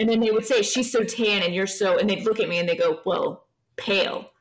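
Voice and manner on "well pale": mock-disgusted tone. Retelling what people would say when comparing the speaker to a sister, imitating a disgusted tone. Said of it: "they would always say it with like a disgust when they said pale".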